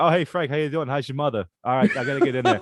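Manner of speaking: put-on Boston accent. Act out a man greeting Frank as he walks up from his parked car, talking like Mark Wahlberg. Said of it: "he's talking like fucking Mark Wahlberg".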